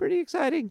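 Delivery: soft voice cracking mid-phrase. Commentator going through a hypothetical tournament bracket, voice cracking. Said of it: "I don't know why my voice cracked".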